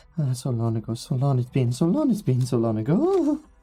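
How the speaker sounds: muttering, mumbling quietly. Voicing a character going down the stairs out of reach: muttering to himself. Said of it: "you can kinda hear him just muttering to himself".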